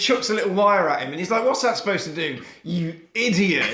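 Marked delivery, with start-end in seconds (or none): 1.5-3.7 cheeky, sassy back-talk tone. Retelling a film scene where a man talks back to a robot: imitating a sassy retort. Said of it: "sassing a robot".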